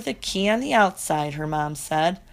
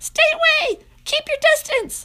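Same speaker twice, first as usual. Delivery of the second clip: very high, squeaky, nervous little squeal; 4 dB louder than usual. Reading a story: the caged narrator squeaks at a dog nosing the cage. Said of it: "I squeaked".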